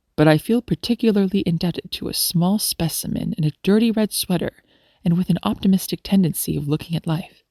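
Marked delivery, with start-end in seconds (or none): none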